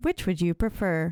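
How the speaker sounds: automated, recorded phone-menu voice. Acting out a killer's call as a phone menu: automated phone menu voice. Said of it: "You have a perfect voice for that".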